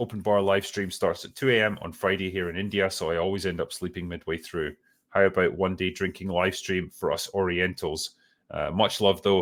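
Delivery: plain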